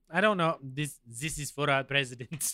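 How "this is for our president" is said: bad French accent, quieter. Acting out the french team's reply, attempting a french accent. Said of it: "I can't do a French accent".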